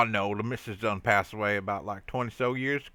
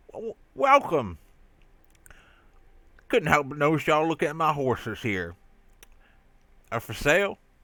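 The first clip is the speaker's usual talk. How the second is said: words pushed around a crammed mouthful; 4 semitones higher than usual. Voicing a horse seller greeting buyers, talking with mouth full. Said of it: "I think I put a few too many pieces in my mouth".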